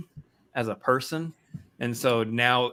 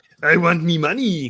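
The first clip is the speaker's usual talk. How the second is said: loud, high, very slow, drawn-out cartoon voice; 6 semitones higher, 7 dB louder than usual. Joking about a studio wanting money, in a Mister Krabs voice. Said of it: "That's my Mister Krabs".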